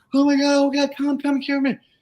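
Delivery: acted, very high, screeching scream. Retelling how a woman called her neighbor over: imitating someone screaming. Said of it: "she starts screaming like".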